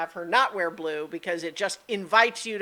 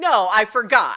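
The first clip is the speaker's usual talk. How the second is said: mock booming, very loud sarcastic tone; 4 semitones higher, 9 dB louder than usual. Explaining how he sarcastically throws it back at her: retelling a sarcastic reply. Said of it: "he's trying to kind of sarcastically throw back at her".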